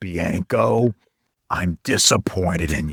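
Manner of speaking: low, hoarse, rasping voice. Retelling how a man tapped his pants and spoke to him, in a raspy voice. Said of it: "with this raspy voice".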